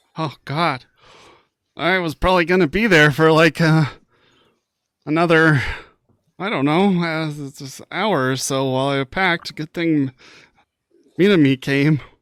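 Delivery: high, loud, terrified, spooked rambling babble. Told someone broke down his door, a character reacts terrified. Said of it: "He looks terrified at that".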